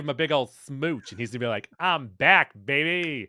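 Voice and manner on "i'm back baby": put-on Cajun-accented speech. Imagining a revived hero's first words after a kiss, Gambit's Cajun accent. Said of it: "That's my Cajun accent".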